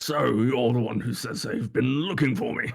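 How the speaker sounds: big, grand, heavy-jowled voice. Reading a character's dialogue aloud, the speaker voices this line in a big jowly voice. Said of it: "Get some jowls on this".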